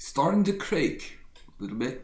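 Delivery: put-on clumsy, failed British accent. Quoting the words of Mark Hebden, attempting a bad Mark Hebden British accent. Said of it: "I can't do the British accent".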